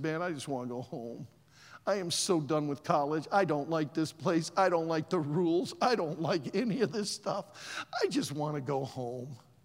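mock weepy, tearful crying. Retelling lying on a top bunk, missing home: retelling own crying words. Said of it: "and I'm crying".

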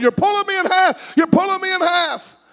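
high-pitched screaming. Retelling how a stuck friend screamed while being pulled out, retelling a scream. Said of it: "He was screaming".

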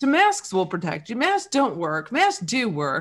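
mock sarcastic rolling rant. Speaker retells what they said before, on a retold sarcastic roll. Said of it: "I went on a sarcastic roll".

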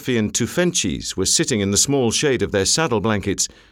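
plain

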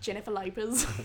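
put-on Australian-accented delivery. Chatting about accents, saying a name in an Australian accent. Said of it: "say [name] in an Australian accent".

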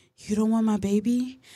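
mock, would-be sexy put-on whisper. Retelling what the man whispered when she said he needed a condom: mock-sexy whisper.

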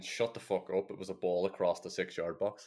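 ordinary delivery

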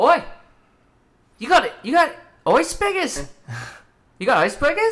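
very high, swooping, put-on fake Australian accent. Joking about how Australians would say a word, doing a put-on Australian accent. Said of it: "It's tough to do Australian".

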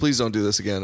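imitated chill, relaxed, calm tone. Describing how the other person reacts, imitating a chill tone. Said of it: "You're pretty chill about it".

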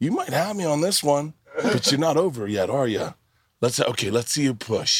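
mock flirtatious voice. Retelling an Instagram arm wrestler's talk to opponents: imitating the Arm Wrestling Whisperer's dirty talk. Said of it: "He dirty talks them".

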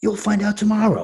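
put-on very high-pitched, loud New York Brooklyn accent. Speaker retells an inner voice heard while sitting with an intuition, brooklyn new york accent. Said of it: "this like New York sort of Brooklyn accent".

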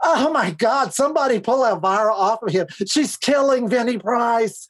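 held-back scream, slow, drawn-out mild yell. Retelling how a tv show assistant screamed into headphones, retelling a scream. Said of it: "he screams".

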